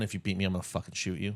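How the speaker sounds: hushed whisper, spoken under the breath. Imagining what a runner said to rivals at the starting line: imagined whispered threat. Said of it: "whispered to everyone".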